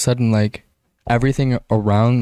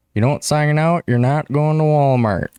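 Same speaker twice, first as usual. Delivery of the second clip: teasing, mocking put-on way of talking; 4 semitones higher than usual. Retelling what the man who takes them to Walmart says: imitating Brian's way of talking. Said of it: "That's how he talks".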